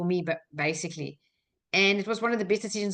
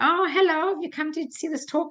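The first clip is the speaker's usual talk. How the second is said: put-on German accent, very high pitch; 9 semitones higher than usual. Retelling how the lady at the front greeted the speaker, german accent. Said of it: "the lady at the front with the German accent said".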